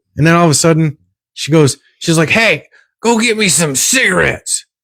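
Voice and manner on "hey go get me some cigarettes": longtime heavy smoker's voice, pitched up. Retelling what a woman said after she sat down, imitating a longtime smoker's voice. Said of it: "with her sixty years of smoking voice".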